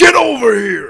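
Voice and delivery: screaming out loud and high. Announcing a favorite game fighter with his catchphrase: Scorpion "Get over here" impression. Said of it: "That was way better".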